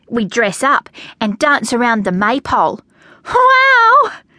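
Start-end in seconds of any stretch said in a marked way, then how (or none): 3.2-4.1 very high, long, drawn-out exclaiming cry. Listening to Alice describe the play, the narrator is crying out. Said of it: "I cried and clapped my hands".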